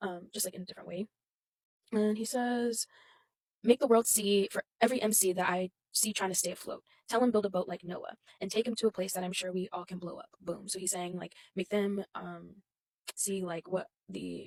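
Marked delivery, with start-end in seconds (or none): none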